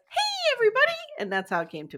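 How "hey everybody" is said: odd, very high-pitched, loud character voice. Explaining how a bit started, the speaker does a character's greeting: weird high-pitched voice. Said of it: "So I started doing it as".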